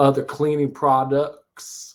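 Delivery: put-on slow Deep South accent, each word held on. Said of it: "like a Deep South type of accent".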